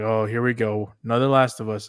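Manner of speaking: ordinary talk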